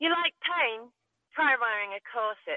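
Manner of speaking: put-on drawn-out posh English accent slipping into Irish. Quoting a favorite film line as Keira Knightley: Keira Knightley impression, slipping Irish. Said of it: "I was a little Irish there at the end".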